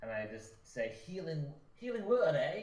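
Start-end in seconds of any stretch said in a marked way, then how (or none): 1.0-2.6 put-on weird British accent, raised pitch. Casting a healing word on another character in a game, weird accent. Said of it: "that's a weird accent".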